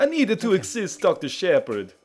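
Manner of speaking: mocking, put-on mixed European accent. Mocking the nurse's accent after she speaks: put-on mixed european accent. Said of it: "The producers did not tell me what accent to have".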